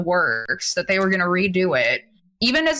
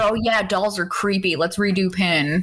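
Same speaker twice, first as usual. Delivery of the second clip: normal talking voice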